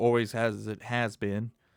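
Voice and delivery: normal talking voice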